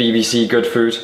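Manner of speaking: ordinary delivery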